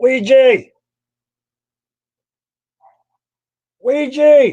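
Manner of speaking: very high, loud shout. Hearing the dog bark, the speaker calls the dog by name, yelling. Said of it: "Y'all excuse me for yelling".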